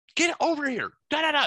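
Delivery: teasing, high-pitched yell.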